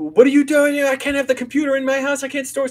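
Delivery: high, loud yelling. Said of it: "been yelling at me going".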